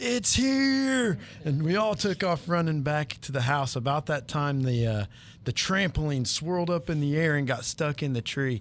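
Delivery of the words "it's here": very high scream, word "here" drawn out. Retelling the moment the storm wind picked up, re-enacting a scream. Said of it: "and I screamed".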